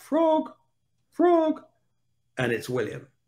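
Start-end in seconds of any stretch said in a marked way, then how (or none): 0.0-1.6 put-on small, piping, very high little kid voice. Retelling how a young boy called out his nickname, imitating William's little voice. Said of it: "I hear this little voice pipe up".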